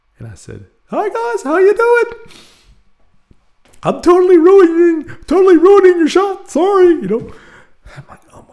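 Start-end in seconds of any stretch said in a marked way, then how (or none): 0.9-6.9 very high-pitched, loud, nervous voice. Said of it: "try to pull my voice down an octave".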